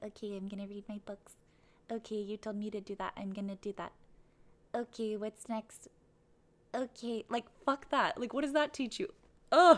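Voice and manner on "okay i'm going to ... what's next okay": mocking, dutiful, obedient goody-goody parody voice. Mocking how a student sat in class: mocking a dutiful good girl. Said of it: "just like a little good girl and was like".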